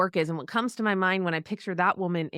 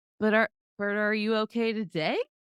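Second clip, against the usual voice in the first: sarcastic delivery; 3 semitones higher than usual. Imagining Jesus asking someone worried about money: imitating sarcastic Jesus. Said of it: "sarcastic Jesus next to us going".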